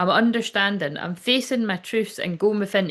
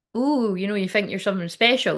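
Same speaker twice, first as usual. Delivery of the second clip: light, playful, jokey teasing tone; 2 semitones higher than usual. Retelling the manager's comment at a photo shoot: imitating a jokey remark.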